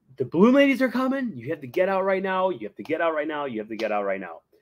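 put-on restrained half-yelling, sing-song, swooping, repeated. Retelling how people in the line were told to leave: imitating people yelling. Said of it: "they start yelling".

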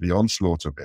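ordinary delivery

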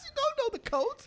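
high, swooping, mocking rant.

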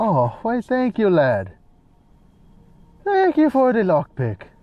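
bad, sad put-on Irish accent, high and swooping. Thanking a game character for a lockpick: bad irish accent. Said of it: "That's a sad excuse for an Irish accent".

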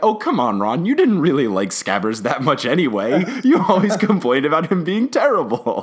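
teasing, needling, jokey tone. Retelling the twins joking to Ron about Scabbers; mock-teasing as Fred and George. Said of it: "quoting twins teasing Ron".

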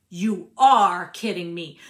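very loud, enraged outburst full of furious disbelief. Narrator reads a woman confronting a man after his confession; furious. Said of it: "furious now".

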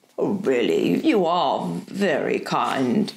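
very low, unhurried, slow murmur. Narrator voicing the Professor replying to Diana's offer of help, murmured. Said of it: "he murmured".

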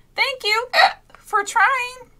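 very high, loud spluttering. A narrator reading Hippo's thanks after Stork pulled his tongue, sputtering. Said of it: "Hippo sputtered".

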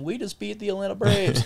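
put-on high, loud, shrieking little-girl scream. Retelling a friend's phone call after a Cubs win: imitating Carson screaming like a little girl. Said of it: "He's screaming like a little girl saying".

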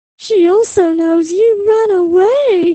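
sly, smirking tone. Replying to a nervous man, she speaks smirking. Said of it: "smirked Kristy".

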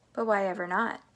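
ordinary delivery

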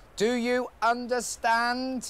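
slow, loud, drawn-out speech. Speaker demonstrates talking to people abroad who don't speak English, slow and loud. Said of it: "I just speak slower and louder".

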